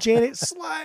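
play-acted, shrill, very high, loud yell. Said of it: "why are you yelling at me".

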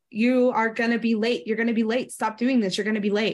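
put-on angry, nagging, shaming, threatening parent voice. Describing the brain as a parent who nags: imitating an angry parent. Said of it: "like this angry parent that's constantly".

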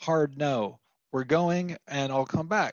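ordinary talk

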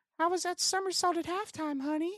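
exaggerated, very high-pitched put-on voice. Imagining the ideal scenario, the speaker voices asking the daughter in a high-pitched voice. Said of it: "you always do that high-pitched voice".

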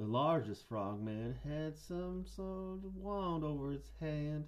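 put-on male voice with a Southern accent. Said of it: "I'll do a Southern guy".

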